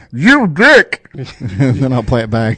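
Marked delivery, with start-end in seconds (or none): 0.2-1.1 weird, disguised, very high strange put-on voice. Showing how they'd make their own sound bite, in a strange put-on voice. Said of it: "In a strange voice".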